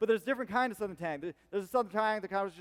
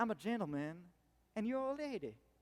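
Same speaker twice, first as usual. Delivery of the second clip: put-on refined North Carolina Southern twang, much quieter; 2 semitones higher, 8 dB quieter than usual. Describing regional accents, the speaker demos a refined north carolina southern twang. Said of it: "the like North Carolina Southern twang".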